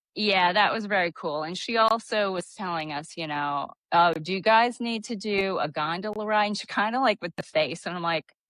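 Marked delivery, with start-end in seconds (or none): none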